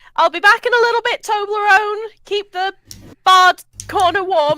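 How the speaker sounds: very high, shrill, carrying yell. Playing Iona in a game, calling to Toblerone before leaving, yelling. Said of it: "I yell".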